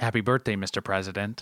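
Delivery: acted sexy yet sad, sultry put-on voice. Retelling what the speaker said to the president in the moment: put-on sexy and sad voice. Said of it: "my best impression of a barbiturate-filled marriage between sexy and sad".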